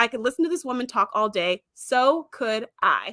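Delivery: plain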